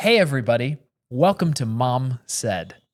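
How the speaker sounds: calm, measured delivery. Podcast host retakes the show's opening greeting, a little slower. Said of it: "Let me take that a little slower".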